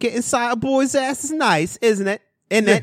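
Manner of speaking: put-on British accent, very high and drawn out. Imitating how british men tag a question onto a sentence: imitating a british accent. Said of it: "I like how British dudes always say".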